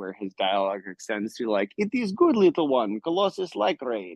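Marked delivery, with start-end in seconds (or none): 1.8-4.2 put-on very heavy Russian accent, pitched very high. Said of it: "speaks in a thick Russian accent".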